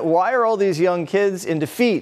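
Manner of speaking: ordinary talk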